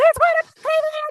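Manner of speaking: very high, stretched, drawn-out shriek. Retelling a blooper where Lucy screams about rats: imitating Lucy screaming. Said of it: "Lucy just starts screaming".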